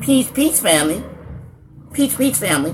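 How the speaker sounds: high, squeezed nasal squeak through the nose. Imitating a man the speaker nicknamed Squeaky: Squeaky's squeaky nasal voice. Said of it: "That's why I called him Squeaky. This boy here sound like he don't have a separation between his nostrils".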